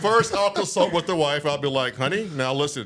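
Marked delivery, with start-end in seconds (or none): 2.0-2.9 put-on, polished radio announcer broadcaster voice. Acting out what he would say to his wife, put-on broadcaster voice. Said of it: "Why you got to put on that broadcaster voice?".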